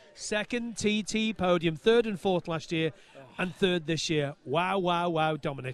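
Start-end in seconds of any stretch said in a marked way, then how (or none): 0.2-1.8 slow, deliberate, carefully spaced repetition. Asked to repeat it a bit slower, saying it again slower. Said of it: "Could you say that again, but a bit slower?".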